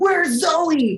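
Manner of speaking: sudden, high, loud scream. Retelling how a co-star rolled in on set: imitating Steven screaming. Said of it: "he just screams".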